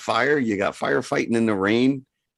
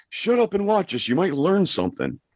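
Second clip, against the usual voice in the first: high-pitched yelling; 6 semitones higher than usual. Retelling a parent's angry words to a child: imitating dad yelling. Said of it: "my dad yelling at me".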